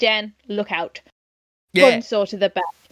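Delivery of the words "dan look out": mock flat deadpan delivery. Describing a scene where he walks up and warns Dan, retelling a deadpan line. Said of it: "deadpan. He just goes".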